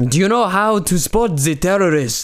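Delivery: put-on Israeli accent with very high pitch. Retelling a joke, imitating how the guy in it sounded. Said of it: "That's what he sounded like".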